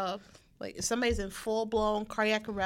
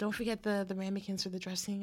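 put-on whisper, quieter; 5 dB quieter than usual. Retelling how a customer came up behind and spoke in the ear: imitating a customer whispering. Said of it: "just kinda whispers in my ear".

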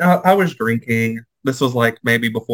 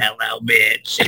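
put-on raspy voice with heavy-smoker rasp. Showing a voice that sounds like a heavy smoker: put-on raspy smoker voice. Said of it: "someone that sounds like they smoke a lot".

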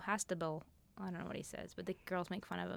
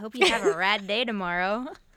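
very loud, glib, fake put-on tone; 15 dB louder than usual. Signing off the podcast: so fake. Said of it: "That was so fake".

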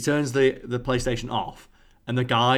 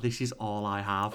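quiet, mock voice full of despair; 3 semitones lower, 6 dB quieter than usual. Retelling the words of a guy whose PlayStation was switched off: imitating a despairing voice. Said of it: "just the despair in his voice".

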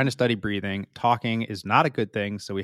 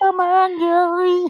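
bad put-on cartoon mom voice, higher and louder; 10 dB louder than usual. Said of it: "Like Marge Simpson".

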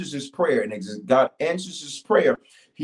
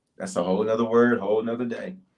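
usual speaking voice

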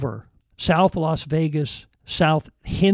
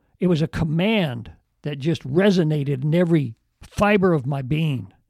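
ordinary delivery

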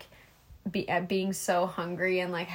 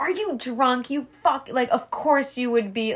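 acted-out irate, lashing out, pitched up; 5 semitones higher than usual. Retelling a show scene, quoting the mom: imitating an angry mom. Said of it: "has to be angry at everything".

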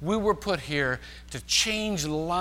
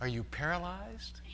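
sweet, very soft, very quiet little voice; 10 dB quieter than usual. Storyteller acting out a woman answering a flustered man, retelling a sweet reply. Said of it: "sweetly says".

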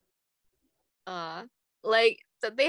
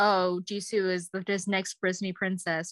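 ordinary talk

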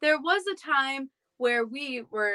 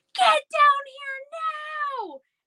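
play-acted yell, very high, very slow, drawn out; 3 dB louder than usual. Retelling how Mom called the kids down: imitating Mom screaming. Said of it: "Mom starts screaming".

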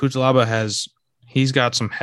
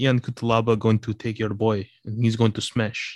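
put-on Polish accent. After asking whether to put on the accent, in a fake Polish accent. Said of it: "do I put on the accent for the next one?".

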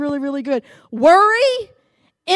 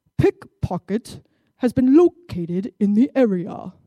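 put-on very strong British accent, public-address announcer style; 6 semitones lower than usual. Retelling a loudspeaker announcement heard in a mall, in a very British accent. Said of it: "in a very British accent".

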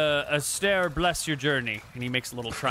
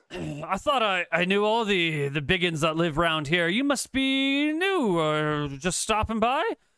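put-on slow, tipsy, drunken dwarf voice; 4 semitones higher than usual. Retelling the dwarf edging closer as he tries to make conversation, in a put-on drunken dwarf voice. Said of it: "a drunken dwarf".

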